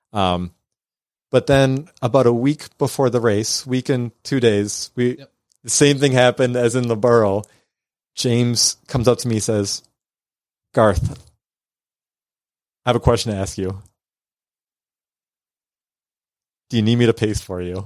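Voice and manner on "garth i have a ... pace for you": put-on old spaghetti Western movie gunslinger cowboy voice. Retelling what someone asked him a week before a race, spaghetti Western voice. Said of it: "You were in an old spaghetti Western?".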